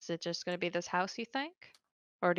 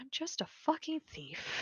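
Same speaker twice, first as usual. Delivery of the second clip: hushed, pitched-up mutter under the breath; 7 semitones higher, 7 dB quieter than usual. Voicing a character leaning back, hand over eyes: muttered under his breath. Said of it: "just under his breath go".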